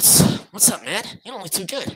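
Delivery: acted gangsta voice pitched way up. Voicing the character Kenji, in a gangster voice. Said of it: "Kenji's a gangster".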